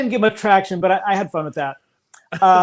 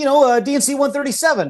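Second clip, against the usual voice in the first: put-on East Coast accent, pitched higher; 6 semitones higher than usual. Retelling a video conversation, quoting the speaker: East Coast Joseph Smith accent. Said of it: "I tried to put on my East Coast Joseph Smith accent".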